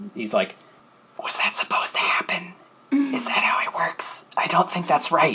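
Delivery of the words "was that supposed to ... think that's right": put-on breathy, husky, squeaky, high-pitched old voice. Narrating a scene, the speaker voices one of two figures in a corner, older, husky and high-pitched. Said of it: "sounds much older and kind of a huskier voice, but still very high pitched".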